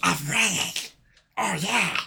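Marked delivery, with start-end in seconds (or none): 0.0-0.6 high, duck-like cartoon character voice. Quoting a kid's acting line that sounded like Donald Duck: Donald Duck voice. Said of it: "that's fucking Donald Duck".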